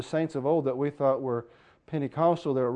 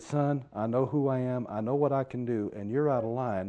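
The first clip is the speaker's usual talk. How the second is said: slower, calm, unraised voice. Speaker retelling what a man said to settle someone down, not raising voice. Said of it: "he didn't have to raise his voice".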